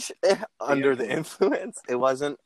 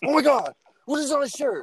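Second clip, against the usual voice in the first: very high-pitched angry outburst; 12 semitones higher than usual. Retelling a story, acting out Steve noticing the shirt, in a mock-angry Steve voice. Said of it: "Angry Steve voice".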